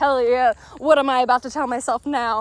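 plain

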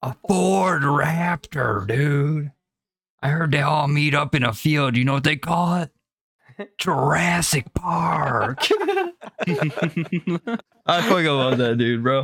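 loud star voice with Park stretched out. Riffing about Michigan locals, the speaker slips into an Owen Wilson impression. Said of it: "you almost just did a mean Owen Wilson impression".

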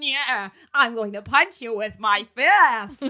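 put-on slow, loud Brooklyn accent. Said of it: "Archie being like".

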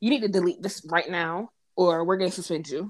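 ordinary delivery

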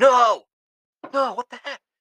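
very loud, very high, shrill, drawn-out scream. Recalling a Broncos loss in front of his dog, retelling a scream. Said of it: "I just screamed".

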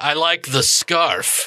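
very slow, heavy, sarcastic drawl. Voicing a game character who compliments a scarf: sarcastic. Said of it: "he's saying it sarcastically".

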